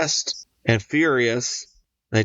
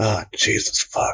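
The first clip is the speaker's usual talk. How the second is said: muttered under the breath, slower; 3 semitones lower than usual. Retelling what another man said, muttering under breath. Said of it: "just under his breath".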